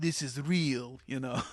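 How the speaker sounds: put-on European accent. Acting out a moment from those movies with co-hosts: swarthy European accent. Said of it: "I don't know what accent I'm doing there".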